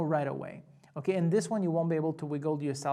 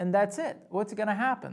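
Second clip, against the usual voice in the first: ordinary delivery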